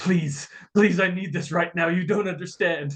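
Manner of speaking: acted pleading, begging voice. Voicing a character begging for the item: pleading in character. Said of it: "Reginald just kind of pleading".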